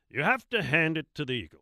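newsreader voice. Reading a favorite local author's piece aloud, in Walter Cronkite voice. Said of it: "I'm going to do it in my Walter Cronkite voice".

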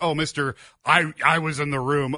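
normal talking voice

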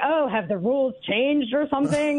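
put-on snooty, condescending voice, talking through the nose. Retelling how people reacted, imitating a guy muttering, in a mock-snooty voice. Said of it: "Like all like snooty".

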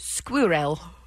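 squirrel pronounced the British way. Asked how the Brits say it, British pronunciation of squirrel. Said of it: "How do the Brits say squirrel?".

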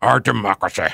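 grave, intoning statesman voice with jaw pushed forward. Showing the trick of pushing the jaw out: Winston Churchill voice, jaw out. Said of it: "in my best Winston Churchill voice ... the bottom jaw has to come out ... An underbite".

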